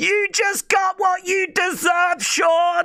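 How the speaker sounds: mock very high, shrill, drawn-out yell. Retelling what a woman in the crowd yelled: imitating someone yelling. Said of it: "Someone just yelled".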